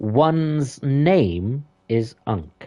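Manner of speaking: very posh upper-crust British accent, drawn-out one's. Speaker demonstrating how they would say their name, super posh accent. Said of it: "Or if I was doing it super posh".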